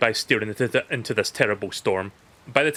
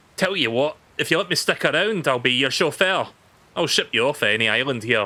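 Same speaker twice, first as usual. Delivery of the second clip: terrible, bad put-on Scottish accent; 2 semitones higher than usual. Scottish speaker voicing a character's dialogue aloud, in a fake scottish accent. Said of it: "so I'm doing like a fake Scottish accent".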